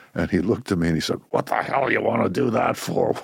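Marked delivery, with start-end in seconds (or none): 1.3-3.2 rasping, rough, creaky voice. Retelling the father's reply to the farmer-or-rabbi answer: imitating father's way of talking. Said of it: "he talked like this".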